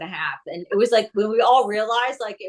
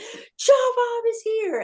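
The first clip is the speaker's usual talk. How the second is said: long, drawn-out, very high excited scream; 13 semitones higher than usual. Retelling staff at the hospital counter spotting the dog: imitating someone screaming out loud. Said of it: "saw Joe Bob and screamed out loud".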